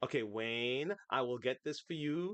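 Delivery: put-on robotic assistant voice. Imitating a voice assistant's reply to Wayne, pausing on every word. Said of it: "every word it says, it's pausing".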